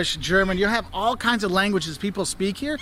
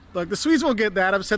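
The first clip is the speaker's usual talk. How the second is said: usual speaking voice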